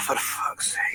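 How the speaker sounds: muttered under breath. A player's character spots a tiefling behind the counter: muttered under breath. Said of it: "mutter under my breath".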